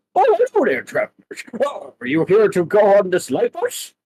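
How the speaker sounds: little, high, swooping dog-person conductor voice. Voicing a little dog-person conductor greeting travelers: dog conductor character voice. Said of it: "this little, um, dog person in a conductor outfit".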